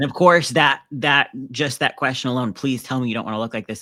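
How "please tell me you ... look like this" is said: heavy, judgmental, disapproving tone. Retelling a mother's question about a magazine: imitating mom's judgmental tone. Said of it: "in her very judgmental way".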